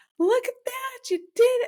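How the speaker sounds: very high-pitched, loud, excited hooting and hollering. Retelling how she cheered the speaker on when the baby was born, imitating loud high-pitched cheering. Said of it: "very like loud, high pitched, high energy voice".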